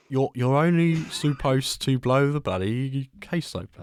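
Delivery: slow, deliberate, drawn-out character voice. Trying the impression again after a good first attempt: Michael impression. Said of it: "let me try and do that again".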